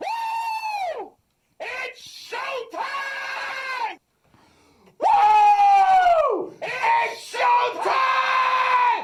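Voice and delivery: shrill, very high rattling yell with a long woo. Imitating a voice from a clip: imitating a rattling scream. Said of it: "I'm gonna have to scream".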